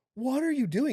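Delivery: mock, shrill, very high, loud screaming. Retelling a mother screaming a name at a dad: imitating mom screaming. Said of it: "just screaming at him".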